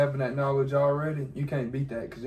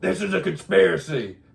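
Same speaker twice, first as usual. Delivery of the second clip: loud, rough, pitched-up voice pushed out; 5 semitones higher, 7 dB louder than usual. Imitating a podcast host calling parents on the phone: Alex Jones impression. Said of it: "his voice is like".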